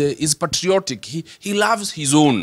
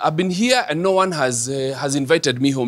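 ordinary talk

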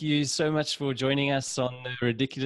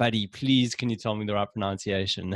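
usual speaking voice

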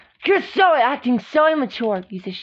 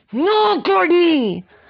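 screamed at full volume; 3 semitones higher, 3 dB louder than usual. In a skit, answering a repeated request for another cookie: screaming. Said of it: "Don't scream at me".

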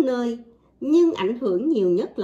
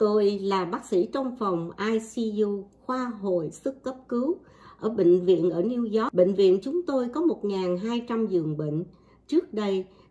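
ordinary talk

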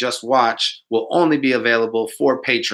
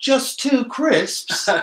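put-on British accent, pitched very high; 13 semitones higher than usual. Retelling what the little british homie said, imitating a british accent. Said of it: "the little British homie was like".

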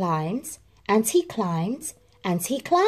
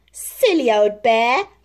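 loud, laughing, fond voice; 6 dB louder than usual. Narrator reads a character teasing the bear who rises higher, laughing. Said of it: "laughed Christopher Robin".

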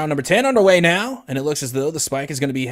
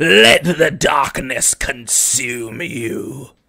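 dark, menacing, evil villain delivery; 4 dB louder than usual. Using evil voices with a co-speaker, doing an evil Emperor Palpatine voice. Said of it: "we're using our evil voices".

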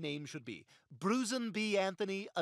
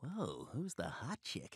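slow, hushed whisper under the breath; 7 semitones lower, 7 dB quieter than usual. Asking another about a woman standing nearby: whispering. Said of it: "You don't have to whisper".

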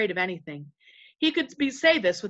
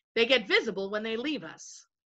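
usual speaking voice

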